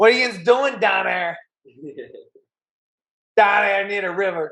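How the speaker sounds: put-on Pittsburgh accent. Asked whether he talks like his friend, the speaker imitates a thick Yinzer accent. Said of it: "he literally talks like a Yinzer".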